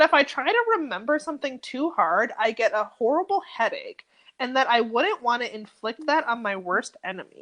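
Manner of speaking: ordinary delivery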